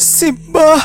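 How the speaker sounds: screaming. Narrator reading a frightened character's cry after a whisper, screaming. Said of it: "teriak Mira".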